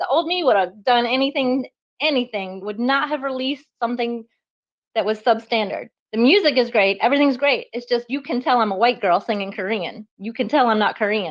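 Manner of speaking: ordinary talk, nothing marked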